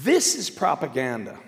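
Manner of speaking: normal talking voice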